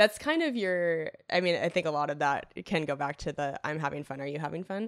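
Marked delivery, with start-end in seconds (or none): none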